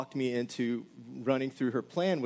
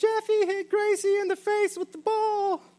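put-on very high, shrill, drawn-out children's screaming; 7 dB louder than usual. Retelling what the kids shouted about the ball: imitating kids screaming. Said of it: "all the kids come screaming".

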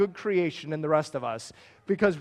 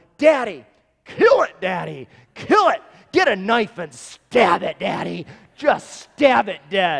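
put-on loud, frantic, excited, pleading kid voice; 6 dB louder than usual. A father retelling his child's cries as a mouse runs across the floor, imitating Micah. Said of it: "there's Micah going".

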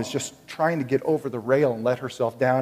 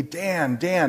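mock panicked yell, much higher pitch; 4 semitones higher than usual. Retelling how his wife ran around the bridge calling him; retelling her panicked yelling. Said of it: "she's yelling at me".

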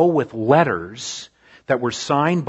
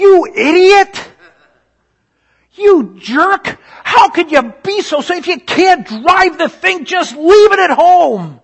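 shrill, very loud, very high, drawn-out yelling; 10 dB louder than usual. Retelling how he yells at other drivers with the windows up, acting out yelling. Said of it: "I'm yelling out".

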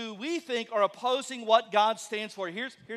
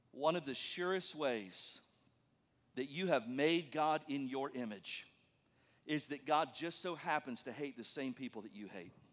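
drawn-out, deliberate, very slow, very low and soft; 8 semitones lower, 11 dB quieter than usual. After asking listeners to listen closely, the speaker says this slowly. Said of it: "I'm gonna say this slowly for once in my life".

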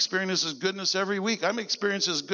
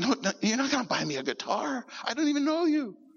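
mock sobbing, tearful, crying; 4 semitones higher than usual. Retelling how a guy answered an offer: imitating a man crying. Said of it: "the guy starts crying".

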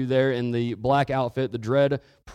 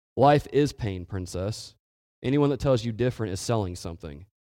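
imitated deadpan, dead straight delivery; 3 semitones lower than usual. Speaker retelling a man's straight-faced reply to her, imitating deadpan delivery. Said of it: "just completely without expression".

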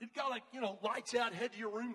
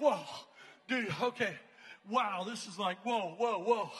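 play-acted, startled, panicky, loud string of "whoa"s; 6 dB louder than usual. Retelling waking up from a nightmare: imitating own freaking out. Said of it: "I'm totally freaking out".

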